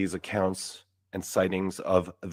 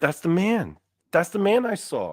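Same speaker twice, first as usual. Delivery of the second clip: put-on child shriek, very high-pitched, swooping; 10 semitones higher, 4 dB louder than usual. Retelling screaming at the TV at age three: retelling own childhood screaming. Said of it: "And I'm just screaming".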